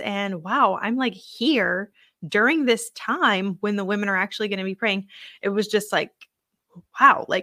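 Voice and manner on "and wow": ordinary delivery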